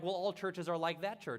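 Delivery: ordinary talk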